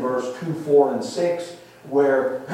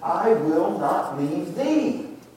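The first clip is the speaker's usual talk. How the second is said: stress on the final word thee; 4 semitones higher than usual. Rereading a verse about staying with Elijah, stress on the word thee. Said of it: "now we emphasize the last word, thee".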